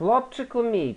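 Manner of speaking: very high-pitched, haughty, condescending tone. The boss addresses his boxer about an upcoming fight, arrogant. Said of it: "продовжив пихато Дон Карб'йонаре".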